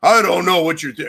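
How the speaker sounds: loud, macho, put-on manly voice. Retelling how someone's voice changed when irritated: imitating a deep manly voice. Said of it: "It got super deep and masculine".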